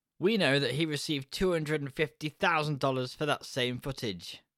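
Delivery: ordinary delivery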